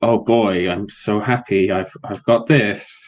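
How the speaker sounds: put-on, insincere happiness. Voicing a character holding a gift stick: fake insincere delight. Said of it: "fake, insincere".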